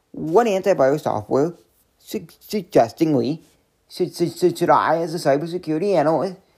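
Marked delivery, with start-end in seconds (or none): none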